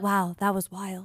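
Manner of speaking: mock easygoing, calm, never raising the voice. Imitating a spotter who never raises his voice: imitating a calm spotter. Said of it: "doesn't ever, like, raise his voice".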